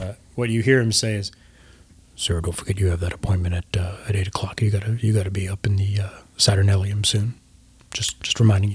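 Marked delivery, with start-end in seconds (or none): 2.2-8.8 soft, hushed whisper. Voicing a character who leans in to remind someone of an appointment: whispering in character. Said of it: "lean in and whisper something into Lucian's ear".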